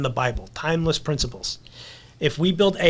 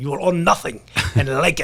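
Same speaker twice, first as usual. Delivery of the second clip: put-on German accent. Quoting the former World Economic Forum head's statement: Klaus Schwab German accent. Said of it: "he said it in that German accent".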